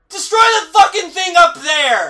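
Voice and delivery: shouting high and loud. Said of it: "I'm just yelling at the movie going".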